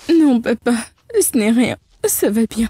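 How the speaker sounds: words pushed out through crying. Asked by her father why she is crying, the daughter answers, crying. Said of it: "Mais tu pleures".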